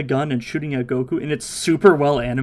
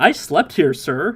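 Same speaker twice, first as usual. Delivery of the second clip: innocent, unhurried delivery. Retelling a character's answer to an upset woman: Goku's innocent response. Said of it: "Goku's just innocent response".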